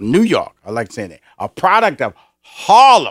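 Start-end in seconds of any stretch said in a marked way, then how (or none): 2.4-3.1 heavy stress on the word Harlem. A host introducing the next guest repeats where he is from, emphasis on Harlem. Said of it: "I put the emphasis on Harlem".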